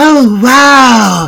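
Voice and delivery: high, loud, wow stretched. Trying out a practised impression for the other speaker: Anna Faris voice. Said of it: "I've tried to master Anna Faris's voice".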